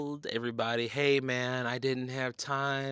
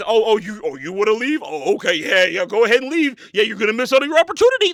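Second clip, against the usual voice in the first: snide, passive-aggressive, raised, pitched-up guilt-tripping tone; 8 semitones higher, 13 dB louder than usual. Retelling how venue staff reacted when the group left: imitating staff guilt-tripping. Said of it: "That was the attitude".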